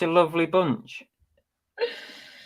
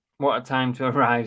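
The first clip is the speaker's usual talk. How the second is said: plain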